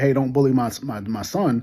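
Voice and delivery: ordinary talk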